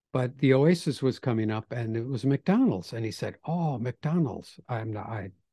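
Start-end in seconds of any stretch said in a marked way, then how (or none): 3.5-4.6 put-on Japanese accent. Retelling what a visitor with little english said: imitating a japanese visitor's accent. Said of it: "forgive me for the accent".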